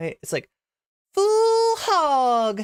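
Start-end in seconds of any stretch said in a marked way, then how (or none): 1.1-2.6 very high, loud hog-calling holler, hog stretched out. Speaker redoes their own phrase, saying it like calling a pig. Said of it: "you gotta do it like you're calling a pig".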